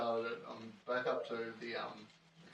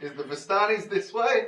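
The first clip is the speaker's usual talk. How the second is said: booming, very loud, very high shout; 9 semitones higher, 15 dB louder than usual. Playing a character who calls out to distant guards: yelling to guards in character. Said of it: "I yell out to the guards".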